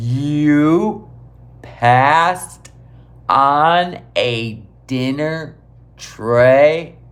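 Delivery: very slow, word by word, stretched "you". Speaker repeating the other person's answer back to them, really slow. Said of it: "I'm gonna say this really slow".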